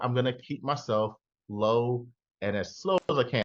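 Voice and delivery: ordinary talk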